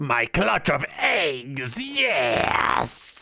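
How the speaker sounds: very slow, drawn-out lizard-man creature voice. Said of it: "I fucking love the lizard man voice".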